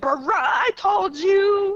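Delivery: very slow, stretched-out acted yell, high. Imagining how he would sound scolding: imitating someone yelling. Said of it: "yelling at me".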